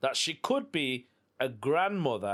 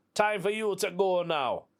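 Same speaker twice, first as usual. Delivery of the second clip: put-on Jamaican accent; 5 semitones higher than usual. Retelling what a woman told them, the speaker quotes her in a put-on jamaican accent. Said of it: "I don't know why I put a Jamaican accent on".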